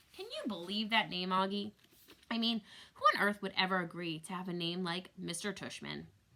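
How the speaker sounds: ordinary delivery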